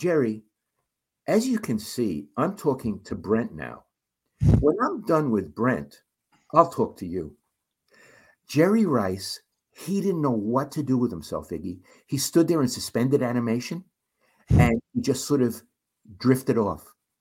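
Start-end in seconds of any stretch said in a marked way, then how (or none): 0.0-7.4 calm, poised, fully composed, sing-song tone. Retelling how Ira answered an angry player: imitating Ira's calm voice. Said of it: "in this voice".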